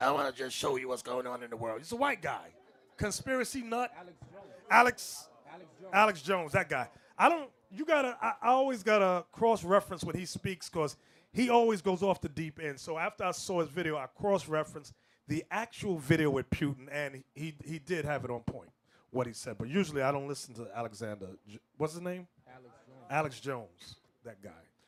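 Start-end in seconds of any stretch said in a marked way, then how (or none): 0.0-1.8 low, raspy, gravelly put-on impression voice. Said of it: "that Edomite guy with the raspy voice? He sound like he swallow rocks".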